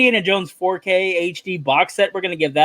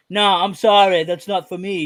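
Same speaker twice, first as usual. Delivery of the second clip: put-on English accent. Acting out a friend turning down a movie pitch: english accent. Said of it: "Does Dave have an English accent now?".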